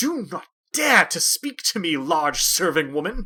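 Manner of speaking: furious, livid, very loud, deliberate bellow. A game master voices a man turning on the serving woman, livid, furious. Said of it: "livid, face red".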